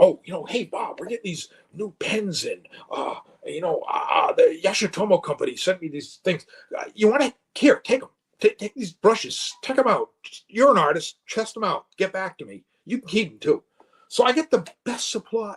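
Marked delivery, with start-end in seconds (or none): 0.0-13.6 offhand, casual, rambling supervisor voice full of fillers. Retelling how a supervisor handed over new brushes: imitating supervisor Bob. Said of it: "and he was like this".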